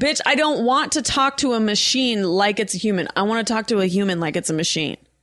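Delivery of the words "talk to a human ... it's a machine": ordinary talk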